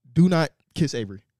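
ordinary delivery

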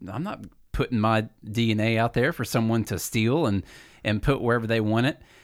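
ordinary talk

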